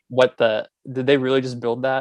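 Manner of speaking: normal talking voice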